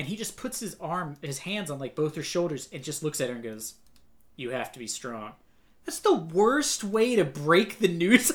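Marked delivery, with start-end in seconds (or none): 4.3-5.3 mock flat emotionless robotic voice, lower and quieter. Retelling how a character breaks news of a death: imitating a robotic emotionless man. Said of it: "a robotic man with no emotion just being like".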